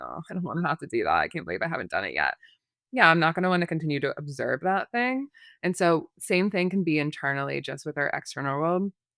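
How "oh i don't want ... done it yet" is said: fast, disgusted, reluctant, fed-up grumble. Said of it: "tense and a little bit, like, disgust".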